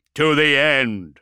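booming, loud, full-throated growl. A wounded first captain answers his commander over the vox; growling. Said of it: "Berengard growled".

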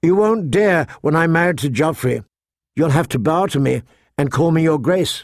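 plain

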